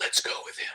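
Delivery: faint, barely audible, hushed and breathy whisper. Retelling a voice heard on a recording: imitating a whispered voice. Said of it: "it actually had a bit of a whisper to it".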